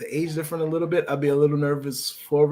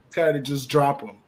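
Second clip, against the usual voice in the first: ordinary talk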